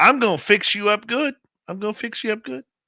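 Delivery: put-on very high Southern US accent. Retelling a phone call, imitating Sandra's southern accent. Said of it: "with that southern accent".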